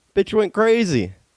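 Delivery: ordinary talk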